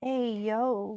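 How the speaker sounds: super soft, dragged-on, breathy. Trying out a greeting after being asked for it soft and breathy: super soft, dragged-on, breathy. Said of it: "Think super soft and dragged on".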